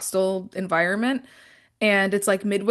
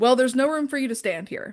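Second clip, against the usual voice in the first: put-on sharp, blunt, curt tone, pitched up; 5 semitones higher than usual. Retelling what the speaker said back at the girl: retelling a sharp comeback. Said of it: "I just straight up clapped back at her".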